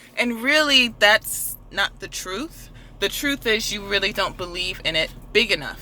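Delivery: ordinary delivery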